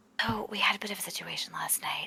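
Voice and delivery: hushed whisper. Secretly telling another character about last night's trouble by magic message: whispering. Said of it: "you're whispering in my head".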